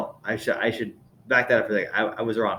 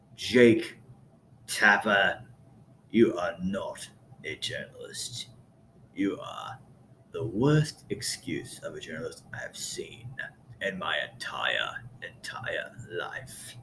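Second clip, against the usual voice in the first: put-on angry man's voice, very deep, lower, quieter; 5 semitones lower, 9 dB quieter than usual. Imitating a deep-voiced podcast host's angry monologue: imitating an angry man talking extremely low. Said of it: "He talks extremely low".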